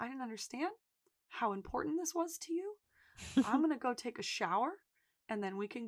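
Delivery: small, soft, little voice. Retelling a scene where a cornered character speaks in Ian's small voice. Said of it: "he gets that small voice".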